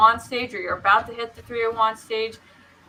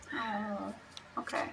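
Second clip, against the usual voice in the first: very quiet, whispered, deflated and let-down; 16 dB quieter than usual. Told they're waiting for the top of the hour, disappointed. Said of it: "You sound so disappointed".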